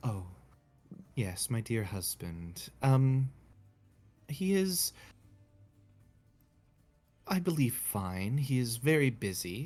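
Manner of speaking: wistful, yearning, slow and longing. Voicing a woman by the little shrine who speaks of her husband: longing. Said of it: "like a look of longing on her face".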